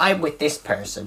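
no-nonsense strict schoolteacher voice. Retelling what a girl said to a friend: imitating a strict teacher tone. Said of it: "she hits him with the strict teacher kind of thing".

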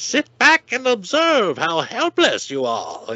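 laid-on bad Chinese accent, high and swooping. Quoting the Mandarin's cartoon line to Iron Man: the Mandarin in bad Chinese accent. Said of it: "in a really bad Chinese accent".

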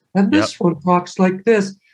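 high, very effeminate puppet character voice. Showing how his second puppet talks, effeminate puppet voice. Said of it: "very effeminate".

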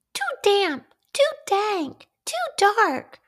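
tiny, very high, squeaky mouse voice. Reading a story aloud, the little mouse in the bear's cave speaks; squeaky mouse voice. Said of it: "Mouse squeaks".

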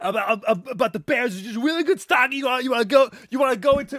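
very high, loud, hard yelling. Imitate a guy who is just yelling about stocks, yelling in Jim Cramer's voice. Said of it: "I just wanted to yell in his voice".

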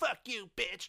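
shouting. Retelling yelling at the other speaker: imitating own past yelling. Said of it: "like when I was yelling at you".

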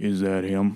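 deep, low-pitched voice. Retelling what someone said as the speaker headed to the bathroom, in a deep voice. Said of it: "From like this deep voice".

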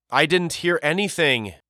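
protesting tone. Walter answers as Hattie runs off toward the battlements: protesting. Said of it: "Walter protested".

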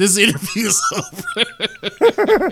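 high, slow, awkward, broken by laughter.

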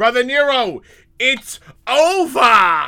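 er said as ah, very high, very loud. Acting out a man walking over after shooting fireworks at Jeff Hardy, in an accent turning ER endings into AH. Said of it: "any word that ended with ER got replaced by AH".

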